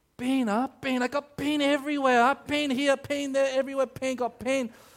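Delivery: put-on high, loud Singaporean auntie accent. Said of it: "She goes".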